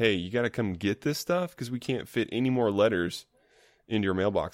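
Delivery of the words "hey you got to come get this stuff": usual speaking voice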